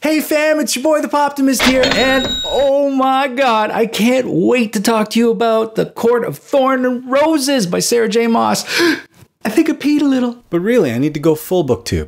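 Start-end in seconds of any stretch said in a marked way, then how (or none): 0.0-10.4 very high, put-on, bouncy, animated online host hype voice. Trying out a bouncy, animated YouTube voice for the channel: bouncy YouTube voice. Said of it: "let's throw some YouTube voice in there".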